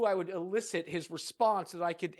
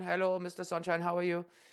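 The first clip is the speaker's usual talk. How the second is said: put-on Indian accent. Retelling a call from a call center telemarketer: imitating an indian accent. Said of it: "the very Indian thing from a call center".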